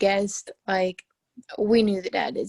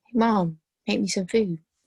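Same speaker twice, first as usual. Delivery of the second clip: ordinary talk, nothing marked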